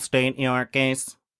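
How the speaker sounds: flat, robotic, machine-like automaton delivery. Narrating a tabletop game, voicing a Clockwork person who walks up to the players: robotic voice. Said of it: "in a very kind of robotic voice say like".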